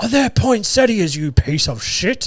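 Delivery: screaming voice. Acting out an imagined Christmas shop worker yelling at a customer: screaming shop worker. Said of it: "just screaming at you".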